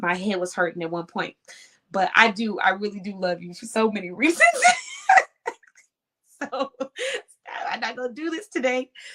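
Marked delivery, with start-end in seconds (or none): 2.6-4.4 giggling, with laughter breaking through the words. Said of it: "I'm gonna try not to start laughing".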